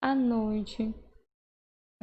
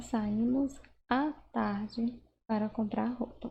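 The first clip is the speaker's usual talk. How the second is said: slow, with à stressed. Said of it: "você vê aqui um outro exemplo".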